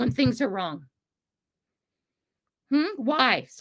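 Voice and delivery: agitated, worked-up tone. Asking why adults stopped standing up for what's right: worked up, needing calm. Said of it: "Sorry, calm, breathe".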